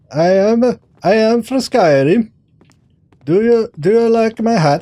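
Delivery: high-pitched Swedish accent. Trying an accent for the first time while role-playing a character: Skyrim Swedish accent attempt. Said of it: "I have never tried to do an accent".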